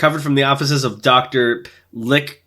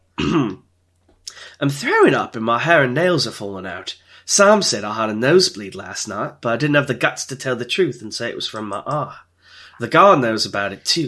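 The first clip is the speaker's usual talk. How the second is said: put-on British accent. Trying the accent again after being told every sentence sounds like a question, put-on British accent. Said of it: "Your country's wounded".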